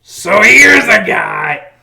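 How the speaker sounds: slow, loud, booming announcer voice.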